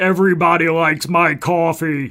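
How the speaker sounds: deep, dopey voice. Joining in imitating Jimmy Church selling coffee: Jimmy Church voice. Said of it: "Something like that".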